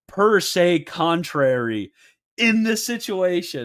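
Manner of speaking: emphatic, every word leaned on hard. Retelling how someone read a phrase aloud: imitating Michael Lofton's emphatic reading. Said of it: "he, like, emphasizes".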